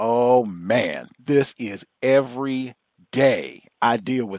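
emphatic, insistent, every word hammered home. Retelling how a man conveyed something, imitating his heavy emphasis. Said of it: "like with that much emphasis".

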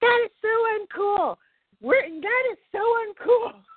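very high-pitched scream, repeated twice. Retelling screaming and flailing as a bird swooped near, retelling own scream. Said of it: "I was screaming and flailing my arms".

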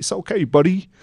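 put-on American accent. Retelling how a trainer reassured them during a workshop: american accent. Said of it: "he's got an American accent".

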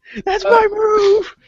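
very high, shrill, wildly excited full-lung screaming. Describing a guy who keeps interrupting his opponent during a match; imitating excited screaming. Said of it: "screaming at the top of his lungs in a very excited manner".

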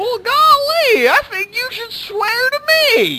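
very high-pitched, loud, drawling voice. Saying a Batman line as if Barney Fife said it: Barney Fife voice. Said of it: "like Barney Fife or something".

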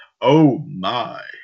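loud, belted-out delivery. Reading a this-day-in-history list, doing a George Takei impression. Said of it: "the George Takei impression".

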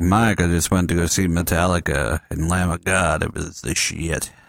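slow, drawn-out everyday voice, words stretched. Imitating a young caller describing a concert: imitating the caller's usual voice. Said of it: "He's like".

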